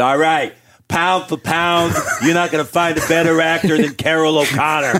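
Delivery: squeaky, very high voice. Retelling what a cousin said about actors: imitating cousin Darren. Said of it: "He goes".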